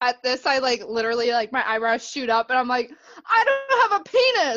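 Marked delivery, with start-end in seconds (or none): 3.3-4.6 shrill, very high, drawn-out yell. Playing a character who is startled by a remark: yelling in character. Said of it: "yell it out".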